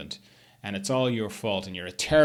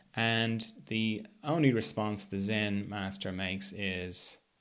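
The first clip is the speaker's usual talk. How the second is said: ordinary delivery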